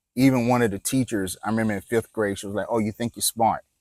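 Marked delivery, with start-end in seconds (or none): none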